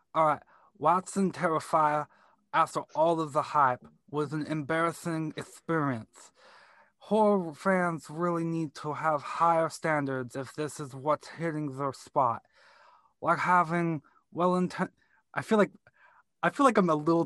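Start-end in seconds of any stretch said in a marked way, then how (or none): 0.8-14.9 slightly slurred heavyweight boxer voice. Reading out a review after asking about a Mike Tyson voice. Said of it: "Should I do it in a Mike Tyson voice?".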